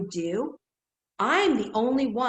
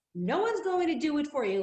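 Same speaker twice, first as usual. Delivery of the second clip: put-on stern but caring tone, higher; 6 semitones higher than usual. Retelling what a motivational speaker said: imitating tough motherly love. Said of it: "very tough motherly love, the way she was saying it".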